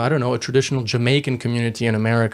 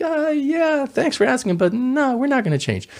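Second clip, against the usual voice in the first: put-on haughty, arrogant tone, very high-pitched; 13 semitones higher than usual. Retelling an exchange where Marines order a course change, acting out the reply, mock-arrogant. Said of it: "arrogant voice".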